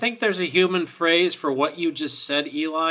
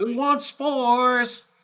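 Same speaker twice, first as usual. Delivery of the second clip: high, shouted call-out; 8 semitones higher than usual. Voicing Kara as she tries a different tack, shouting out. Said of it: "Kara shouts out".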